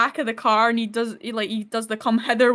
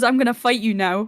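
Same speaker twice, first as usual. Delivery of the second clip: put-on quiet speaking voice. Retelling a film scene, Deadpool's reply to Wolverine: imitating someone speaking quietly. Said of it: "it just really quietly goes".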